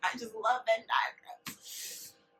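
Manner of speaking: put-on slow, laughing Southern accent.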